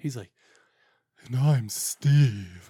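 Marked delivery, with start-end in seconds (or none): 1.3-2.7 deep, sensual, very manly timbre. Imitating how the other host always introduces himself: imitating Steve's sensual manly voice. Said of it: "his sensual voice and his, his very manly timbre".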